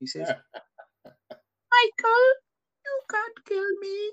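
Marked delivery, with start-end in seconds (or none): 1.7-4.1 squeaky, very high, cracking, drawn-out voice. Retelling a line from Morbius, imitating a voice cracking high. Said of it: "his voice cracks and goes all high pitched".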